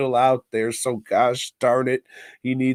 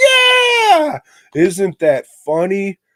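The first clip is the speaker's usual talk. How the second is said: put-on very loud, drawn-out, sing-song childish chorus voice; 8 semitones higher, 9 dB louder than usual. Retelling the movie's cut to the kids: imitating kids. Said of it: "cut to the kids going".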